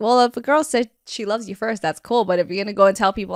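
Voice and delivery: ordinary talk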